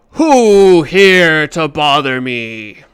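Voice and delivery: thundering, very loud booming bellow. Narrating a scene where a voice shouts out at the group, booming shout. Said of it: "hear a booming voice shouts out and says".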